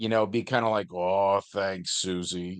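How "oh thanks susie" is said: low, gruff voice, kept gruff. Voicing Ben answering Susie's praise, in Ben's low-pitched, gruff voice. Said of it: "in his low-pitched, gruff voice".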